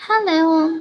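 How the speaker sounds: prim, modest, demure and gentle. Asking if they want a demure boss, with a soft, demure voice on hello. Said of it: "yung mahinhin na boss na".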